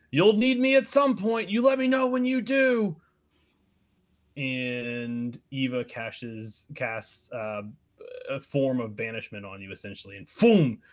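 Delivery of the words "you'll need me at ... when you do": very high, loud, shrieked scream. Voicing a character who calls from down the hall: screaming. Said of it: "he screams".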